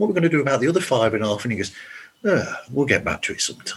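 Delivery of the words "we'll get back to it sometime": casual, noncommittal, vague dismissive voice. Retelling what Gil said about the unfinished pages: imitating Gil. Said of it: "That's a pretty good impression right there".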